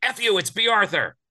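very high, shrill, loud, furious angry scream. Telling a story about a phone call, the speaker reenacts screaming at everybody: retelling own angry scream. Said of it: "I screamed at everybody".

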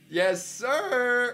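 squeaky, very high cracking voice. On a stream call after a new mic gets turned up, voice cracking. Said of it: "I voice cracked".

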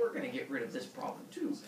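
plain reading voice

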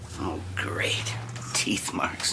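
soft, whispered, under-the-breath grumbling mutter.

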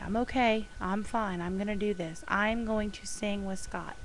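ordinary talk

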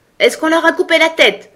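very high, sharp, loud cried-out shout. The queen calls out a question to her soldiers, shouting. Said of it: "cria la reine".

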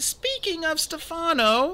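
timid, hesitant, very high-pitched voice. Narrator voicing a girl speaking to Uncle Monty, timid. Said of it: "she said timidly".

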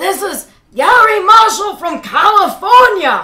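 very high, very loud, booming, slow, drawn-out voice. Retelling a phone call from Garry Marshall: Garry Marshall impression. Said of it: "'Cause that's how he talks".

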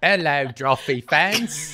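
attempted British accent. Speaker greets the Drawfee fans in an attempted British accent. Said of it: "our closest attempt at a British accent".

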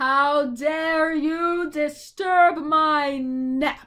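enraged, furious, loud bellow in a giant's voice. A narrator reads his outburst at being disturbed, a furious bellow. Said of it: "He bellowed furiously".

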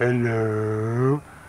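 slow, loud, drawn-out delivery.

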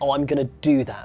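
plain

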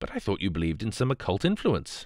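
ordinary delivery

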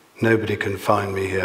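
ordinary talk

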